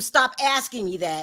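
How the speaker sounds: plain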